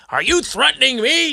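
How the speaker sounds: put-on very high, outraged, indignant shriek. Retelling a man who blamed speaker for hitting his car: imitating someone screaming. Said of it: "if you scream as loud as you".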